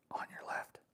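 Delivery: soft, breathy whisper under the breath. Retelling hearing someone whisper a warning while sitting, hunting: retelling a whisper. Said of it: "I hear Tristan whisper".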